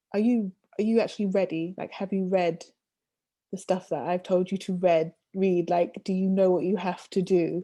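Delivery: ordinary delivery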